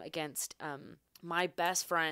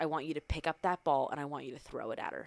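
put-on hushed whisper; 3 semitones lower than usual. Recalling a ball game, the speaker repeats what mom said at the gate: retelling mom's whisper. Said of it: "she whispers to me".

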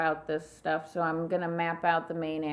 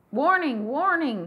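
loud, high alarmed shout; 9 semitones higher, 6 dB louder than usual. In a tabletop game as skeletons approach the sleeping party, yelling out a warning. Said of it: "Are you yelling out warning".

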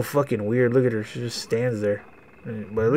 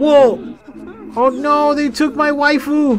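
very high, slow, drawn-out, alarmed panicked cry; 4 dB louder than usual. Breaking off a story to react to an abduction: panicking. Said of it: "I'm just panicking".

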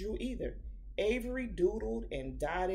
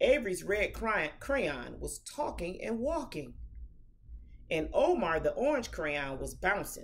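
plain reading voice

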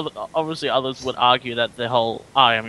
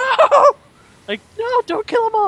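very high, loud, full-on scream; 6 dB louder than usual. Recalling first watching it at three years old, reenacting a childhood scream. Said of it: "I screamed out".

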